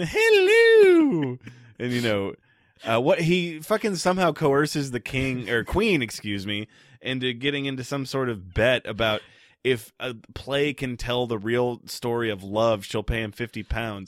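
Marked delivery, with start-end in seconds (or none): 0.0-1.4 shrill, drawn-out, shrieking yell. Retelling a man yelling from the back of the room, retelling a Mrs. Doubtfire yell. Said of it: "yelling from the back of the room like Mrs".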